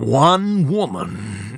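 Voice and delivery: put-on movie-trailer voice, low and very slow.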